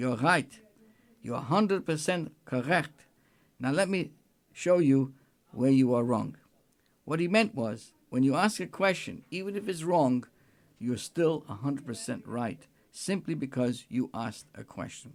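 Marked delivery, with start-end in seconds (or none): 0.0-6.4 put-on heavy, thick Yiddish accent. Quoting a yeshiva teacher who loved questions: heavy Yiddish accent. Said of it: "he would say in a heavy Yiddish accent".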